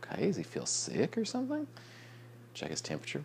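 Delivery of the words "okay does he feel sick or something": high, anxious, worried voice. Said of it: "And I was like".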